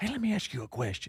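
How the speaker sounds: soft, hushed half-whisper under the breath. Retelling sitting down with her at the shooting house to ask something: retelling a half-whisper. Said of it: "I'm whispering".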